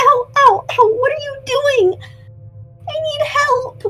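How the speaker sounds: small little voice. A creature hit by a thrown Molotov cries out, in a small little voice. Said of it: "you do hear the ver- little voice again go".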